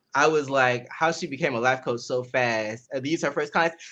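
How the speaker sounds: ordinary delivery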